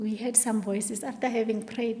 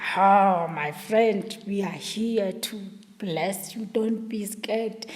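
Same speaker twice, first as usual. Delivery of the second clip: deep, dropped voice; 3 dB louder than usual. Retelling what the voices in the darkness said to her, in a deep voice. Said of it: "Deep voice".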